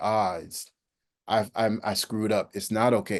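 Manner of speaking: ordinary delivery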